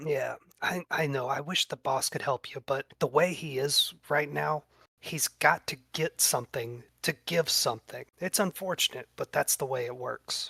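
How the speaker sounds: hushed, whispered speech. Game master, as a character, speaks to Inchie during a tabletop game, whispering. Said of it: "he's whispering that to".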